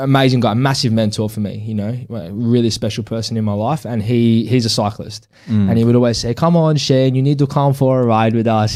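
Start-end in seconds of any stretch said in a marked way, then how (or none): 6.3-8.8 put-on sort of, best-try Swiss accent. Retelling what his swiss cyclist mentor always said, in a swiss accent. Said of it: "that's my best sort of Swiss accent".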